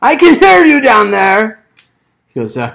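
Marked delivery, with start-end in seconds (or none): 0.0-1.6 shrill, very high-pitched shout. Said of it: "he yells down".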